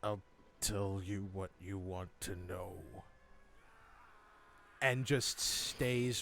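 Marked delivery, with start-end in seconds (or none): 0.0-2.7 very low, under-the-breath dragon mutter. Narrator speaks as the dragon answering the party, dragon muttering. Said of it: "and he mutters".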